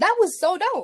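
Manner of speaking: very high, loud, thrilled, delighted squeal.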